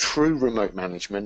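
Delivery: TRUE stressed and lifted with a rising tune.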